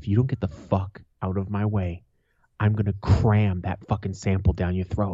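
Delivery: low, deep, menacing voice, kept down. Retelling answering a man in a store who gave him a look, said real low. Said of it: "I said real low".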